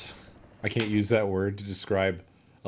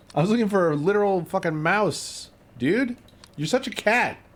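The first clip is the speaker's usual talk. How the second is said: furious rant, very high-pitched; 11 semitones higher, 4 dB louder than usual. Realizing the clue meant a literal mouse, talking to Dav, angry voice. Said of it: "Despite the anger in my voice".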